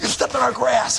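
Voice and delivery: mock very high, really mad, angry complaining voice. Retelling a confrontation over his buddy stepping in the grass, acting out someone real mad. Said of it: "He's real mad about it".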